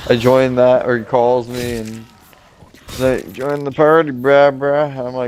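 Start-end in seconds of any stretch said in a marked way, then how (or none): 3.3-5.1 put-on drunk voice, higher pitched. Retelling a call that invited him to the party: imitating Weston sounding drunk. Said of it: "you sound drunk as shit".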